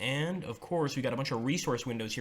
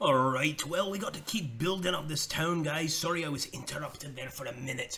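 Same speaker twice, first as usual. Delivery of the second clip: bad, fake put-on Irish accent; 3 semitones higher than usual. Speaker building up a town, addressing the guys, in a put-on Irish accent. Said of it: "I'm gonna stop talking in this Irish accent".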